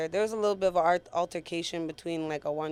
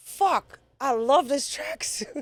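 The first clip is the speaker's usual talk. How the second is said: much higher, slow, comic dismayed cry. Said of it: "First thing I said was".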